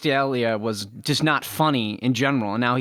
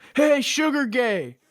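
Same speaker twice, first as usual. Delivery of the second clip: put-on very high-pitched jeering, heckling shout; 12 semitones higher than usual. Retelling a story about a heckler at a concert: imitating a fan yelling. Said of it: "a fan yelled at him".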